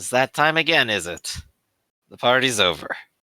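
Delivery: muttered, mumbled under the breath. Narrating a scene, Jamer gets into line and pulls out a cigarette: Jamer muttering. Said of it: "just kind of mutters".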